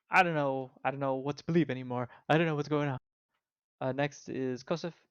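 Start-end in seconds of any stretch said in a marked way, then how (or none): 0.1-2.9 confused-sounding rogue character voice. Voicing the rogue in a game scene: voicing a confused rogue. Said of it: "he starts walking forward, he's like".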